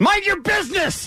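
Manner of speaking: put-on very high-pitched shrieking scream, old man voice. Acting out an old man on a treadmill answering an offer of help: imitating an old man screaming. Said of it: "he screams it".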